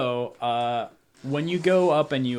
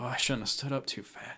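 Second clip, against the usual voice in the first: put-on slurred drunk speech, quieter; 8 dB quieter than usual. Voicing a drunk brother trying to wake the other: drunk slurring voice. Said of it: "hear him slurring their words".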